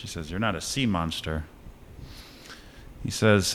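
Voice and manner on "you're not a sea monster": normal talking voice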